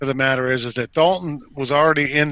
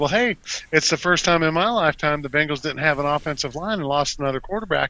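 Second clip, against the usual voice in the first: ordinary delivery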